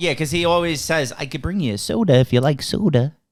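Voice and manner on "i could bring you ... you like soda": put-on childlike, boyish little boy voice. Quoting a film character's offer of soda: imitating a little boy voice. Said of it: "That's his l-, little boy voice".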